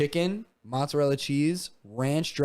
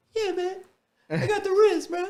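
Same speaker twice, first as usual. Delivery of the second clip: put-on very high-pitched little kid voice; 4 dB louder than usual. Retelling a viral TikTok clip of a little kid: imitating the Rizzler. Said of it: "went viral on TikTok for just going like this, being this little kid".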